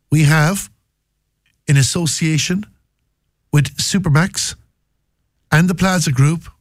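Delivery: slow, drawn-out words with long pauses.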